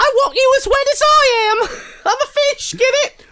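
shrill, loud yelling in a put-on British accent. Playing a fish in a comedy bit, the speaker is yelling in a british voice. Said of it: "when you yell in your British voice".

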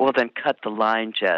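put-on cold tone. Retelling the reply from a phone call, retelling a very cold voice. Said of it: "in a very cold voice".

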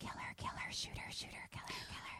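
very quiet, barely audible, repeated whispers. Retelling a film scene where voices whisper to a character: imitating whispers. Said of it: "whispers of".

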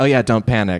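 normal talking voice

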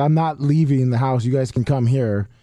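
ordinary talk

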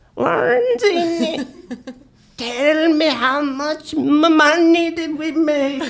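put-on very high-pitched little old man voice. Speaker retells how a man came over and asked him, little old man voice. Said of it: "he assumed this like little old man affect".

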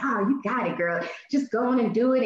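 mock hyped-up, encouraging cheering voice. Retelling what the barber said: imitating someone cheering her on. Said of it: "he was, like, cheering me on".

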